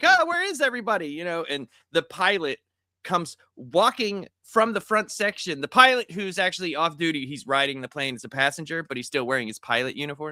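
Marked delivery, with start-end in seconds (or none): 0.0-1.1 put-on very high-pitched small little girl voice. Retelling a movie scene, imitating a little girl. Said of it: "the blind girl, like, is like".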